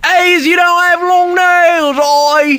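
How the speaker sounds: put-on Australian accent, pitched very high. Joking about what would happen at an australian nail salon, in a put-on australian accent. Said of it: "What if she was went to an Australian nail salon?".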